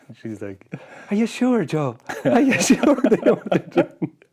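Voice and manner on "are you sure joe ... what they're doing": put-on very high, loud, light, shrill, little Irish accent. Speaker imagines how a woman would question Joe: South Park cop's wife voice. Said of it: "that the cop's wife in South Park who's got that little Irish accent".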